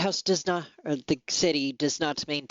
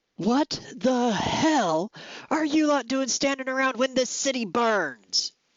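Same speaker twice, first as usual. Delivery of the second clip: loud, booming bellow; 8 semitones higher than usual. Voicing a captain calling out to the guardhouse: booming voice calling out. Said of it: "calls out in that same booming voice".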